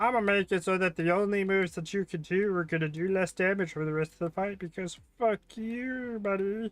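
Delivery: high-pitched cartoon character voice. Playing a Pokemon game, voicing the opponent's Slowpoke: Slowpoke voice. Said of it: "That is his exact voice".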